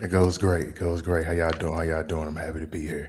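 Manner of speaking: late-night R&B talk-show host voice. A guest answers the host's greeting on the show: like a late-night R&B talk show host. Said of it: "talking to us like an R&B talk show host".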